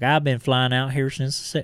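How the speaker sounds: fake southern US accent. Retelling a man in a YouTube tour video, in a put-on southern accent. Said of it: "I don't know why I'm giving him a southern accent".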